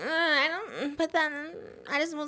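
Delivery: a little whiny, cute, high and drawn out. Imitating the other speaker's voice: imitating a slightly whiny voice. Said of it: "It just sounds a little like".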